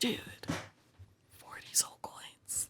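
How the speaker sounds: breathy whisper under the breath. Retelling what she whispered to her friend during a deal, retelling a whisper. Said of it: "She like whispers Paxley like".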